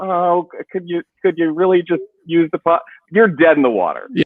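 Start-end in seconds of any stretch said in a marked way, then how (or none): 0.0-2.8 plaintive, pitched-up, begging plea. Describing how not to negotiate with a toddler, mock plaintive pleading. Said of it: "being plaintive and be like".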